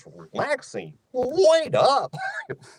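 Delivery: very high, bouncing, goofy cartoon voice. Showing how a cartoon character's line should sound, in a goofy cartoon voice. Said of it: "you want that goofy thing".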